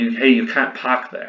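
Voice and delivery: Bostonian-style speech. Imagining a Bostonian telling someone they can't park there, Boston accent. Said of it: "it would be easy if this was a, a Bostonian".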